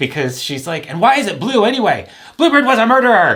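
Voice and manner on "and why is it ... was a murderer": very high, shrill, very loud angry yelling. Retelling a woman still yelling at the speaker while walking away, imitating her yelling. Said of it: "she was still yelling at me".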